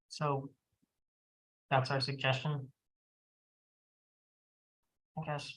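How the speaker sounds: soft, let down, deflated, disappointed tone. Wrapping up and presenting the suggestion to a partner: disappointed. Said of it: "You sound disappointed".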